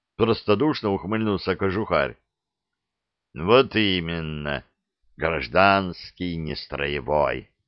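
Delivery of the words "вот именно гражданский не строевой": grumbling under his breath, lower pitch. The lieutenant answers Kozhukhar's question, grumbled to himself. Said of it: "проворчал про себя лейтенант".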